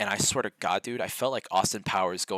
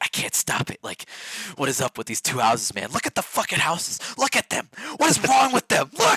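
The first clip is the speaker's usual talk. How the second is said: put-on very high, fast, unhinged, obsessive, frantic ranting; 9 semitones higher, 6 dB louder than usual. Retelling own past words while obsessing over two houses: imitating own past frantic obsessing. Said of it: "seeing me go completely insane over these two houses".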